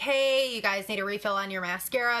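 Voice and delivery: ordinary delivery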